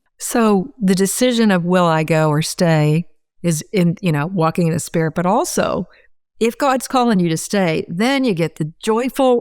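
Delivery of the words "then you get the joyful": dry, ironic, mock-cheerful sarcastic tone. Explaining a calling to stay, said with a sarcastic tone. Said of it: "I'm being sarcastic".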